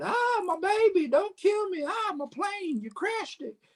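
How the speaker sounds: mock very high, panicky, scared-sounding voice. Retelling a movie scene where a woman faces the killer: imitating a scared woman. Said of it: "She gets all scared".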